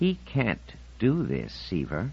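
intense, contained, simmering anger, soft and slow. Eugenia speaks to Seaver, not loud but intense, in quiet intense anger. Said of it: "Eugenia Insignia blazed quietly with anger".

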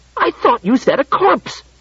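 indignant, affronted, high-pitched outrage. A narrator reads a man's reply as he stares at the robot, outraged. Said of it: "said in an outraged voice".

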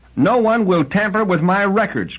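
high, cried-out voice. Liebig replies to a man questioning him about robots; cried out. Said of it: "cried Liebig".

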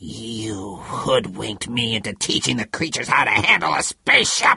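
low, almost inarticulate growl, you drawn out. Zamo accuses the other man, his voice an almost inarticulate growl. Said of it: "Zamo's voice was an almost inarticulate growl".

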